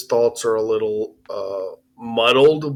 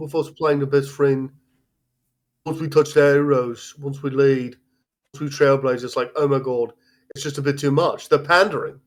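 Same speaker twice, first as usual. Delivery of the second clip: overly posh, put-on British accent; 3 semitones higher than usual. Reading the passage in the accent another speaker suggested, in a too-posh british accent. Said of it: "you sound a little too posh".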